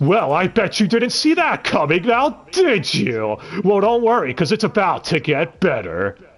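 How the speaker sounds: patronizing voice-over, talking down. Imitating how the narrator talks to the viewer: imitating a condescending narrator. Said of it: "talks condescendingly to the viewer".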